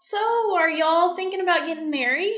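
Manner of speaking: high, loud, nonchalant, offhand voice.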